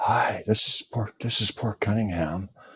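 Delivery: speaking softly. Showing the other speaker how to talk soft, talking soft. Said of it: "why don't you just try talking soft?".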